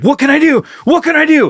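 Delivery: frantic, panicked voice. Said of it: "She's like".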